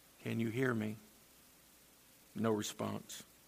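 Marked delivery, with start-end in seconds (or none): 0.2-0.9 hushed, barely audible, very quiet half-whisper. Telling a story about a husband testing his wife's hearing: quiet half-whisper. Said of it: "very quietly whispered".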